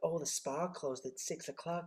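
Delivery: soft, hushed, slow, drawn-out put-on American accent. Quoting what they'd be told while jet-lagged after going transatlantic: american accent. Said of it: "The reason why I'm doing an American accent".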